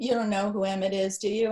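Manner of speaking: ordinary delivery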